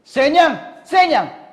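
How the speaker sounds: loud, high-pitched, snapping barked shout. Narrator reads the king at the dinner table calling out, snapping and shouting. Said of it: "Singhal ng hari".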